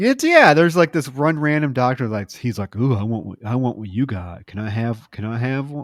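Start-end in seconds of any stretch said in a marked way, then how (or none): 2.8-5.8 put-on, mock flirtatious voice. Retelling a movie scene, imitating a flirtatious doctor. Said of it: "being very flirtatious with her".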